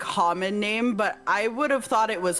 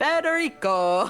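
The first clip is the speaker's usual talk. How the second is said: silly fake Italian accent, higher; 5 semitones higher than usual. Saying a name that sounds Italian, joking: stupid put-on Italian accent. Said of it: "almost put a stupid accent on".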